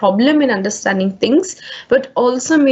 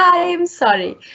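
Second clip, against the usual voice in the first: light, insincere, pitched up; 7 semitones higher than usual. Showing how an apology to a friend sounds: said with a big smile. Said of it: "with a big smile on your face".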